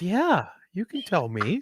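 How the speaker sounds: put-on concerned voice. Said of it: "genuinely concerned".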